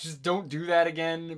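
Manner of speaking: plain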